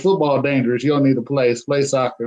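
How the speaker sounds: usual speaking voice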